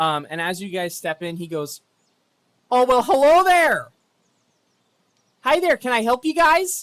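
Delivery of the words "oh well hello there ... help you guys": shrill, booming, very high, loud, happy chipper voice. Game master voicing a man at a podium greeting the arriving party, chipper and happy. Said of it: "a very happy, chipper looking uh, man".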